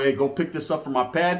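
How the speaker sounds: ordinary delivery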